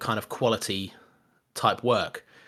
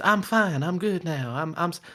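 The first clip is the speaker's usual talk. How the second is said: slow, creepy, drawn out, then abruptly cut off; 7 semitones higher than usual. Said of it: "That's [name]'s voice".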